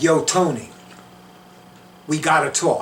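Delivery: put-on talking with an Italian New Yorker accent. Retelling how they addressed a print of Saint Anthony: New York Italian accent. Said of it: "I know I was talking like an Italian from New York".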